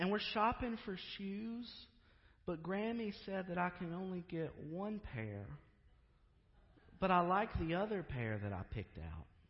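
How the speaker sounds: put-on tiny, sweet, high little-girl voice. Retelling a phone call, voicing the caller: imitating a tiny, sweet voice. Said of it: "this tiny, sweet voice say".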